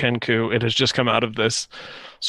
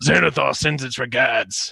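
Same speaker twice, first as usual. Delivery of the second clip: put-on deep, orc-like orcish accent. The tied-up Kenku comes out of the laughter spell and speaks: deep orcish accent. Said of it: "in this deep, sort of orcish accent".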